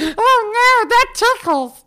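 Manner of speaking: very high, squeaky talking-toy voice. Asked to do the voice again after it was mistaken for a phone: put-on tickled voice. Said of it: "Can you do that again?".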